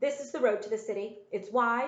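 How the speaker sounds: plain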